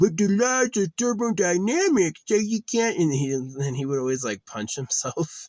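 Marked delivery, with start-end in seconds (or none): 0.0-3.0 very high, loud, dopey, dim-witted dumb-guy voice. Describing a man's physics bit, the speaker quotes his put-on character, imitating a dumb-guy character. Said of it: "he would like put on a dumb guy costume".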